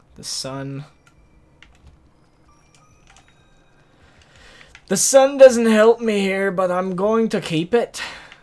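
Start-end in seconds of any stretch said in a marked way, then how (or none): 4.9-8.0 atrocious fake Scottish or Irish accent. While playing a game, the speaker comments on a move; bad scottish or irish accent. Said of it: "That was my Scottish / Irish, I guess, accent".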